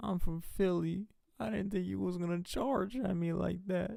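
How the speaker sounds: acted, very high, blubbering, tearful crying voice. Acting out the kid who sat there after his battery charge, imitating someone crying. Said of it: "He was just sitting there crying like".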